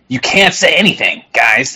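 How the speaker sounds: put-on snickering fat-guy voice. Mocking a show host who keeps saying the same things, in a mocking fat guy snickering voice. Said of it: "in his fucking fat guy snickering voice".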